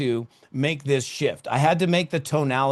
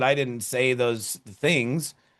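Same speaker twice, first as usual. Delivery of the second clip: plain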